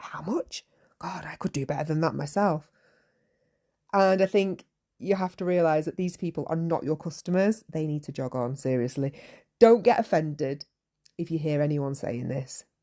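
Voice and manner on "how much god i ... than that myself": put-on mutter under the breath. Imitating fair visitors who grumble at prices: imitating muttering under breath. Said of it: "saying things like under their breath".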